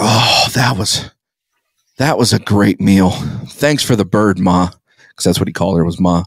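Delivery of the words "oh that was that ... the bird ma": slow, unhurried, drawn-out grandpa voice. Retelling a grandfather thanking the cook after Thanksgiving dinner: imitating grandpa. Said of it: "And he's just like".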